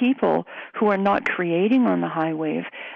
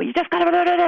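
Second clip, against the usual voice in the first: mock, very high-pitched, fast, angry babbling rant; 11 semitones higher, 4 dB louder than usual. A parent recalls how they used to rant at home, retelling a fast angry rant. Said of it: "talking really fast ... angry tone ... like this".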